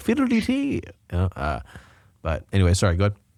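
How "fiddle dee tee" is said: very high-pitched put-on leprechaun accent. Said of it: "sound like a leprechaun".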